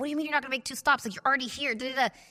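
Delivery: mock heated, indignant, fired-up angry outburst. Retelling arguing with an Uber driver who refused two stops: retelling an angry outburst. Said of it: "fired up".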